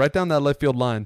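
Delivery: plain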